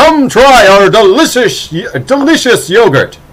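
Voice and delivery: big projecting announcer voice. Speaker shows how they call out to customers in the store, big projecting announcer voice. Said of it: "a big kind of projecting announcer voice".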